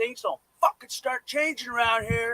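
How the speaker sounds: full-on, loud, high-pitched scream. Describing a trick for a crowded room, the speaker demonstrates screaming. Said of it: "scream it".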